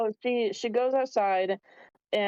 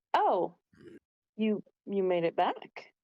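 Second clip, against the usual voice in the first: startled, shocked, surprised exclamation. Voicing Madame Yelis meeting Bren on the stairs: shocked Madame Yelis. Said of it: "she is quite shocked to see you".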